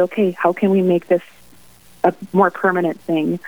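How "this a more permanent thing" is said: ordinary talk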